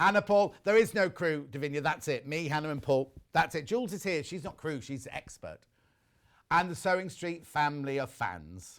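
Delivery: ordinary talk, nothing marked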